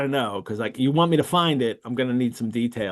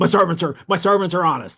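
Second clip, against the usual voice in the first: mock defensive male tone, pitched higher; 5 semitones higher, 3 dB louder than usual. Retelling a man grilled by Holmes over the theft, imitating a defensive man. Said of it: "he's really defensive about it".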